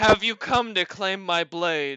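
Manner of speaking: big, loud, booming giant voice. Storyteller voices a figure looking down at the listener, in a booming voice. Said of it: "with a booming voice and says".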